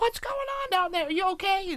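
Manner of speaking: very high, yelled shout. Recalling beating a video game as a kid, the speaker quotes their mom: imitating mom yelling from basement. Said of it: "yelling in the basement".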